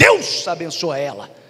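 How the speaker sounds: mock irritated tone. Retelling what was said after getting cut off in traffic again: imitating own angry remark. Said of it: "já comecei a ficar com raiva e falei".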